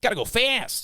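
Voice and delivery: pitch pushed way up, cartoon-style. Backing away from the mic to show a co-host a voice, Sonic the Hedgehog voice. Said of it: "I can go like".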